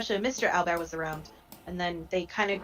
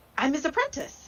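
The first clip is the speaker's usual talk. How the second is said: very high voice, full of pride; 10 semitones higher than usual. Answering as a character asked about his master: proud voice. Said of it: "a lot of pride in his voice".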